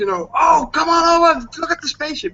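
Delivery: reenacted shouting. Recounting calling the neighbors over to see the spaceship, retelling a shout. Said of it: "And I shout to my neighbors".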